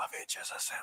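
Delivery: hushed, breathy whisper under the breath. Retelling a scene, quoting a character's line, whispering. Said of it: "he whispers".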